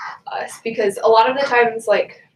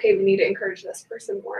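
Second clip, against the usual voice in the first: plain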